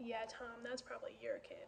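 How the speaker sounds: mock judgmental tone. Retelling a neighbor's remark at the adults' table: imitating a judgmental tone. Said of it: "in a very judgmental tone".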